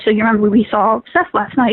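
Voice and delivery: ordinary talk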